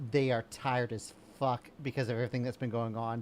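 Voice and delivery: ordinary talk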